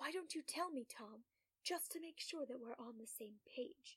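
very soft, hushed voice. Reading a story aloud, the narrator answering quietly: lowered voice. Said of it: "I lower my voice to his level".

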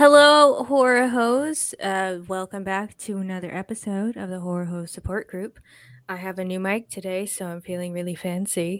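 fancy, refined public-radio announcer voice. Podcast host opening a new episode on a new mic, in an NPR voice. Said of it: "I have my NPR voice going on".

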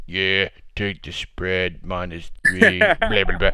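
very low, bored, swooping delivery with zero enthusiasm. Mocking a co-host's delivery of betting picks: imitating an unenthusiastic delivery. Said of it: "I don't need this".

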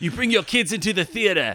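put-on British accent. Riffing with other speakers on a mock movie pitch, in a British accent. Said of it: "Was that a British accent that I just did?".

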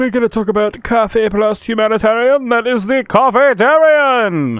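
very high, loud, big cartoon-narrator delivery. Podcast host introducing Coffeetarian to a guest, like the Powerpuff Girls announcer. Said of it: "I just sounded like I was the announcer for the Powerpuff Girls".

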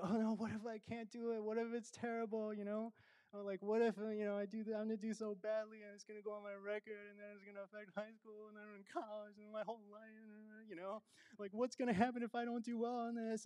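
put-on crying, high, weepy and worried. Retelling a daughter's worried words during a breakdown: imitating someone crying. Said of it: "She's, like, crying, and she's saying".

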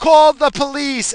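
very high, loud shouting. Retelling the assistant principal yelling through the office door: imitating someone yelling. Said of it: "he yells".

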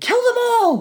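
put-on sharp shriek, pitched very high. Recounting a scene that irritated him, shrieking the line as Joffrey. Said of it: "he just starts shrieking".

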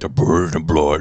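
low, deep demonic voice. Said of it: "more demonic".

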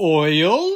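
high, drawn-out, odd put-on voice. Interjecting one word during a movie discussion: weird put-on voice. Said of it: "that was me saying oil in a weird voice".

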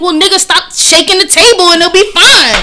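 very loud, high-pitched, annoyed, fed up. Retelling own reply to a date about the shaky table: imitating own upset reply. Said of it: "I'm starting to get mad upset".

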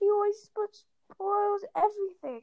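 high shouting between big fake sobs. A boy, held in his mother's arms, yelling with fake sobs. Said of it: "Dudley yelled between huge pretend sobs".

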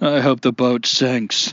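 imitated muffled speech. Retelling a president's reply with his head in his hands: imitating a muffled voice. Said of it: "responded in a muffled voice with his head in his hands".

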